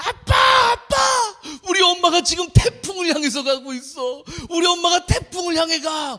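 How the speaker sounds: acted, high-pitched, tearful, crying little girl's pleading voice. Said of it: "담비가 막 울면서".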